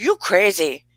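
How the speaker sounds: put-on Danish accent. Retelling what a man says to her later, Stephen's Danish accent. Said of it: "he'll go in his Danish accent".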